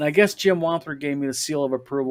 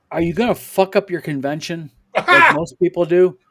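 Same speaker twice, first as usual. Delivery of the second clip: loud, genuinely gruff, rough-edged delivery; 3 semitones higher, 7 dB louder than usual. Retelling how Tim responded to him about his convention, imitating Tim gruffly. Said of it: "he goes real gruffly".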